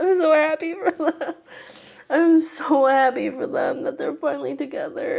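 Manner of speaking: weeping with happiness, high, tearful crying voice. Reacting to a couple finally getting together: crying. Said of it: "Why am I crying right now?".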